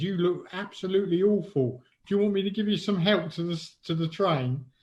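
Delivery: put-on London accent. Speaker quoting a friendly homeless man on the way back, homeless man's London accent. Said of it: "In sort of his London accent".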